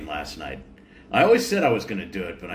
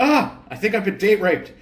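piercing, shrill, high, loud full-on scream; 12 semitones higher, 5 dB louder than usual. Player's character slamming open the door, screaming.

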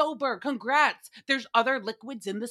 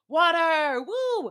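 play-acted, excited, whooping screamed cheer; 4 semitones higher, 3 dB louder than usual. Retelling how Andy Cohen screamed into the camera: imitating Andy Cohen screaming. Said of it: "Screams into the camera".

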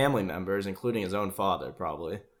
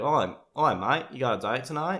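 put-on Australian accent of an ordinary man; 4 semitones higher than usual. Quoting a young man's Australian dad talking to him, imitating an Australian accent. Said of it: "His dad is just an Australian guy".

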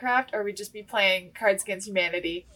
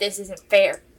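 put-on complaining voice, louder; 7 dB louder than usual. Retelling how dad complained when the kids all targeted him. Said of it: "he's like".

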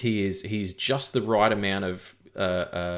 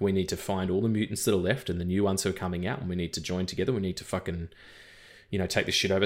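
plain

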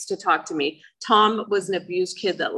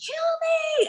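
mock very high-pitched screaming at the top of the lungs. Recounting being held at gunpoint, re-enacting the plea: retelling a scream at top of lungs. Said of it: "I start screaming".

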